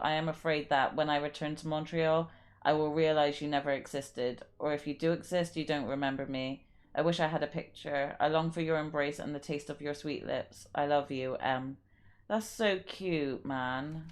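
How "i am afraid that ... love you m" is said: usual speaking voice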